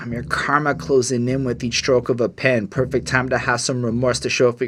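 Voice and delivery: ordinary talk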